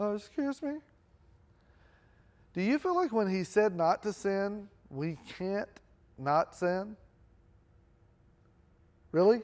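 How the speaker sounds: put-on little, squeaky seventeen-year-old voice. Retelling asking a question from far back in a crowded room, squeaky seventeen-year-old voice. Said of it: "I'm a little squeaky seventeen-year-old voice".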